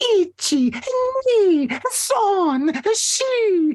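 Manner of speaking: dainty, very high princess voice. Imitating a woman paying her bill, talking like a princess. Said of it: "as if she was a princess".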